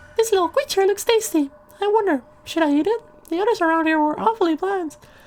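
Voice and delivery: very high, sinister, ominous little voice. Willow's mind is read in a game: high-pitched ominous Willow voice. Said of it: "very ominous for such a high-pitched voice".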